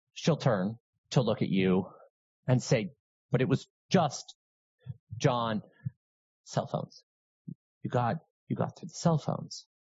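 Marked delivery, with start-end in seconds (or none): 3.3-9.7 strained voice, panic barely held in check. Describing a scenario, the speaker acts out what she says to you; acting someone holding back emotion. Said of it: "she's trying very hard to control her emotions".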